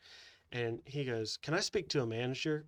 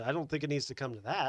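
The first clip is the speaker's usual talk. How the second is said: put-on sugary, sweetest possible tone; 2 semitones higher than usual. Retelling what the speaker's manager said, imitating a very sweet tone. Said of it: "my manager goes in the most like sweetest way".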